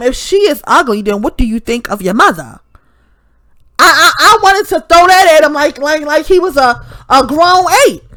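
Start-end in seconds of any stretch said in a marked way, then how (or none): none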